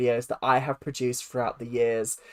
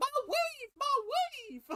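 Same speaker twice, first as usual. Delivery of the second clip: very high mock shout. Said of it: "Was Rumpelstiltskin just shouting".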